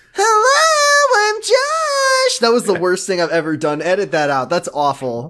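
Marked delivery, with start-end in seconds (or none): 0.2-2.4 extremely high, squeaky helium voice. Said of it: "helium voice".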